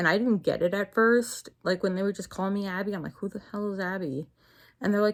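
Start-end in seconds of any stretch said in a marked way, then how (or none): none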